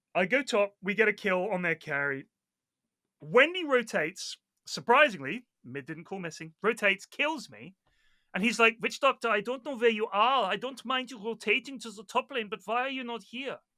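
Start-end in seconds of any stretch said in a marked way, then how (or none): 8.8-13.6 put-on German accent, pitched up. Retelling what a teammate said after a death: imitating a German accent. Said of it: "And what is this accent?".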